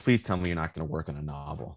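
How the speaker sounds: very deep, dropped bass voice. Writer retelling what a man told him about his next book: imitating a very deep voice. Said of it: "he has this very deep voice".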